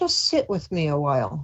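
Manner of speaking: tender, kindly, gentle, lovely inviting voice. Retelling what a voice said to the speaker, very soft, lovely voice. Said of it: "I heard this very soft, lovely voice that said".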